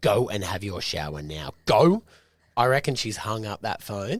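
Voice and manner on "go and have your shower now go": worn-out, fed-up, exasperated tone. Repeating a caller's order to her kids: imitating a fed-up mum. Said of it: "You can hear that in her voice".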